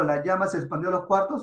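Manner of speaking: ordinary talk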